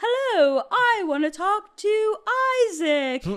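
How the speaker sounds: weird, very high, slow put-on voice. Retelling a prank phone call answered by a girl's mom, really weird put-on voice. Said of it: "he puts on this like really weird voice too".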